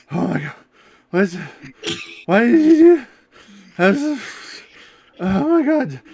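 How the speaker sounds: halting, breathless, very high, very loud panting gasps. A character catches up to the others, hands on knees, panting heavily. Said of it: "is panting heavily".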